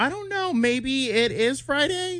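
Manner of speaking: uncertain, unsure upward lilt ending on Friday. Demonstrating how your speech goes up when unsure, with rising unsure intonation. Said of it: "or you go up".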